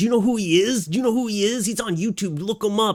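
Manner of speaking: high, mad, indignant angry voice. Retelling how a friend got mad at the bouncer, imitating a friend getting mad. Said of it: "Starts getting all mad at the bouncer".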